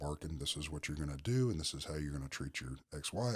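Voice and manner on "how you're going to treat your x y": ordinary talk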